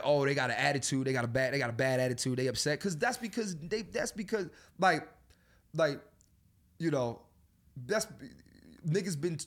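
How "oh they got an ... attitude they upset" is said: ordinary delivery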